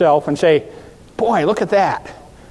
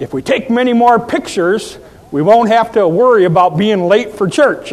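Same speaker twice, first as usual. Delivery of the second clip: loud, projected remark; 4 semitones higher, 4 dB louder than usual. Speaker quotes Dick's dad speaking across the auditorium during photos, retelling a loud remark. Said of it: "he says with a loud voice".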